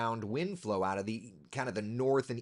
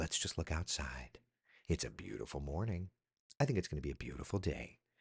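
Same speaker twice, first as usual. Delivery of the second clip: put-on, hushed golf commentator delivery; 9 semitones lower, 8 dB quieter than usual. Doing a weather check-in, looking outside in a golf announcer voice. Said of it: "like in a golfer's announcer's voice".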